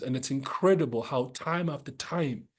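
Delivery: ordinary talk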